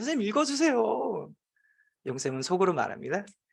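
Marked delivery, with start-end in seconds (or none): 0.0-1.3 put-on high-pitched, pleading clamor of kids' voices. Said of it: "아이들은 아우성이야".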